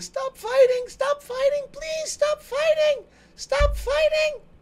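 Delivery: very small, tiny, very high-pitched little voice. A game master voices someone Dell hears during combat, in a very small voice. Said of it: "a very small voice going".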